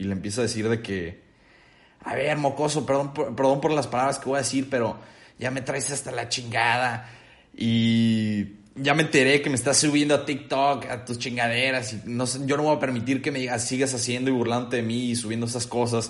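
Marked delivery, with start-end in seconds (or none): none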